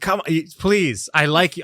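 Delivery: earnest, imploring, begging pleading tone. Retelling how a partner asked him to slow down: imitating someone begging. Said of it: "begging me to slow down".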